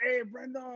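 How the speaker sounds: put-on clumsy Mexican accent drifting French. Retelling a director's greeting on set: imitating Guillermo's accent. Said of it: "I'm gonna butcher his accent".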